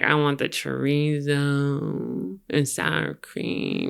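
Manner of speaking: mock-drunk slurred words. Retelling ordering burritos at La Bamba late at night, imitating drunk slurring. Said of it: "I would just be slurring my words".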